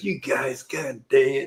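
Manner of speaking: put-on irritated, slow, drawn-out, angry grumble. Retelling a prank victim's reaction: imitating someone mad. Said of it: "He was so mad".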